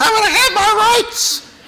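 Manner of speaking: very high, mocking put-on woman's voice. A speaker quoting the spirit of the age; imitating a woman's voice. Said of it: "I need to say that in a women's voice".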